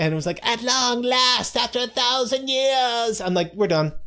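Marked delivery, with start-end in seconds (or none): 0.5-3.2 very high-pitched, hammy, overacted delivery. Describing a character's first introductory scene, mimicking her line; mocking an overacted high-pitched line. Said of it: "that was too high pitched".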